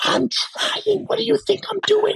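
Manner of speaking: put-on whisper-fighting. Recalling arguing while the babies were small and sleeping, mock whisper-fighting. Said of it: "you're talking like".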